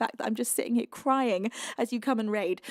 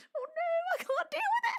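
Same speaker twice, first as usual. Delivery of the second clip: crying, tearful, voice breaking very high; 4 dB quieter than usual. Thanking everyone and saying it's too much to handle, crying, voice breaking. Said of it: "I'm just sitting here crying".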